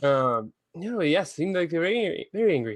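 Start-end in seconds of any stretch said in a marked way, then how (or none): 1.3-2.8 put-on Irish accent. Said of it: "I'm doing an Irish accent".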